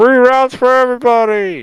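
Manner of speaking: shrill, far-carrying shout, pitched way up. Voicing someone in the back of a tavern crowd: yelling out from the crowd. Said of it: "someone in the back yells out".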